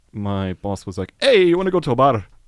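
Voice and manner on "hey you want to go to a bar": very loud, high-pitched put-on Irish accent. Retelling how the boss asked about a bar, speaker quotes them in an Irish accent. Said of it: "here comes the Irish accent yeah. again".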